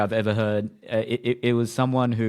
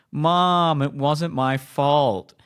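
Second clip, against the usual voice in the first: put-on whiny sobbing, drawn-out vowels; 4 semitones higher than usual. Retelling a story, the speaker acts out a 28-year-old man whining and crying to his mom. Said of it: "he starts whining and crying".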